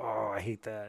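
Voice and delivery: grudging, unwilling, reluctant begrudging tone. Retelling what a woman said about a painting: imitating a begrudging tone. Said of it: "very begrudgingly and kinda like".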